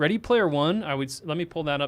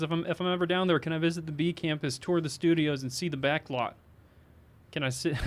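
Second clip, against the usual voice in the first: usual speaking voice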